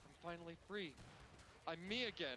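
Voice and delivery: normal talking voice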